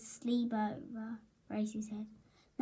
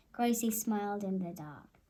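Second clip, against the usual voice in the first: ordinary delivery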